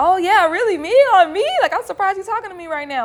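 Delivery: very high, starstruck, disbelieving gush. Retelling a new dancer's reply to a star: imitating a starstruck guy. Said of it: "really starstruck".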